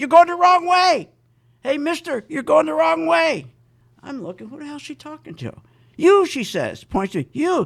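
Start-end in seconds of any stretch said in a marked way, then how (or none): 0.0-3.5 loud yelling voice. Retelling a supermarket employee shouting at him, imitating an employee yelling. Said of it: "She's yelling at me".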